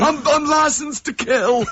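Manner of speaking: very high-pitched put-on voice. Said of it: "Percy Sugden".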